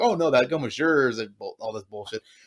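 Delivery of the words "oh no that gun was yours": ordinary delivery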